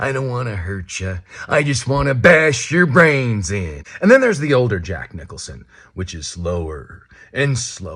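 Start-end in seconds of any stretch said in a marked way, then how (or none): 0.0-3.8 high, nasal voice, pitched up. Teaching how to do impressions, demonstrating a young Jack Nicholson impression. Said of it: "That's a higher tone, higher up in your voice here".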